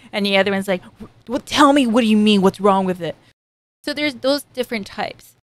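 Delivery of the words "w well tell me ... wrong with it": put-on mildly irritated, defensive, slightly angry, raised voice. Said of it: "The one that kinda sound angry".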